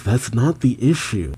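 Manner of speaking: ordinary talk, nothing marked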